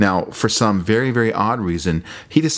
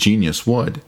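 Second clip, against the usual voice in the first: normal talking voice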